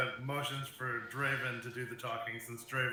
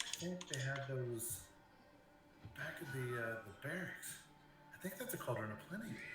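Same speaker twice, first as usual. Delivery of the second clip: very hushed mutter under the breath; 10 dB quieter than usual. Playing a character nudging a companion about a cauldron: quietly under his breath. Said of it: "Quietly, under his breath".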